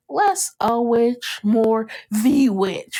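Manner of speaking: put-on demonic voice. Recapping a scene where Alice asks Death if she's a witch, Rio's demonic voice. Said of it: "Remember when she did that like demonic voice?".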